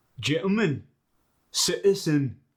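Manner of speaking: loud Scottish accent, t swallowed in "gentleman". Teaching the Scottish dialect's glottal stop, the speaker says example words in a Scottish accent. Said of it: "the Scottish dialect".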